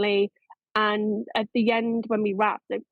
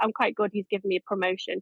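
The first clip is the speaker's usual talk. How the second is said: plain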